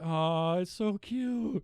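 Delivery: play-acted tearful, weepy voice, very high. Recounting crying at a scene in a movie: retelling own weepy reaction. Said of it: "I'm over here weeping. I'm like".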